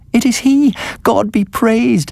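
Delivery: very high, cried-out voice. Sedenka sees a figure coming out of the forest toward them, crying out. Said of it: "Cried Sedenka".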